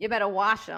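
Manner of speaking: put-on mimicked New York accent. Retelling what the other speaker said earlier, in a New York accent. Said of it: "You said it in the New York accent".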